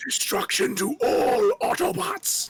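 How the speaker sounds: very slow, drawn-out, chilling villain voice. Doing a requested character voice for the others: G1 Megatron voice. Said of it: "G one Megatron. Do it".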